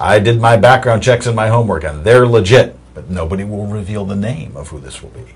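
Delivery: ordinary talk, nothing marked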